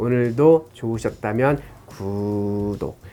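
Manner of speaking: very slow, soft, gentle, each word drawn out. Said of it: "천천하고 나긋나긋한 말투로".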